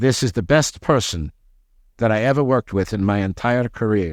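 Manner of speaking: imitated heavy Dutch accent. Retelling a phone call with a job reference: imitating a heavy dutch accent. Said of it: "heavy, heavy Dutch accent".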